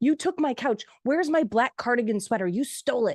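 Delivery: acted-out upset, angry old woman voice, high-pitched. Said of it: "she's yelling at her kids".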